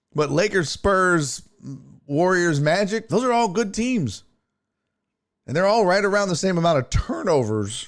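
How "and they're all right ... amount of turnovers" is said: breaking voice, cracking partway. Talking through NBA team stats aloud, voice cracking. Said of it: "my voice cracked".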